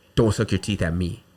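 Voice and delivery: put-on scolding, rebuking tone in a Puerto Rican accent. Retelling what a babysitter said when scolding: Puerto Rican accent. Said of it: "with that Puerto Rican accent".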